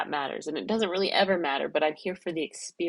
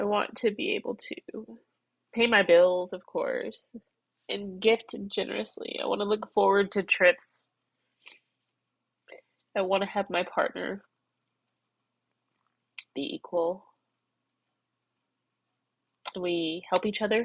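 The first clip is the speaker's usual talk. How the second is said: tearful voice, higher pitch; 3 semitones higher than usual. Telling a listener what they want from life, crying while talking. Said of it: "I can't be crying like this".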